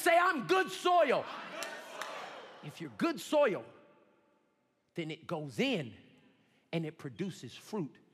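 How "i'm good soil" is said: slow, high voice full of faith. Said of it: "Say it one more time with faith".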